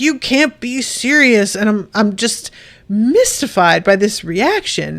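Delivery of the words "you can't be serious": imitated heckler-like yelling. Retelling how people reacted to his question, imitating people yelling. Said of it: "people are just yelling like".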